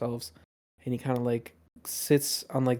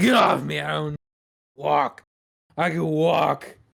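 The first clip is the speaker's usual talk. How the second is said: mock drunken speech; 3 semitones higher, 6 dB louder than usual. Voicing a drunk captain shoving off a helper: voicing a drunk captain. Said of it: "he is definitely more drunk".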